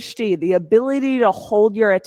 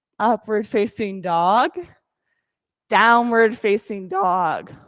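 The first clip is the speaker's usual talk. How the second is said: cracking voice, slower. Instructor calling out yoga poses to a morning class, voice cracking. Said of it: "Nice voice crack for you all".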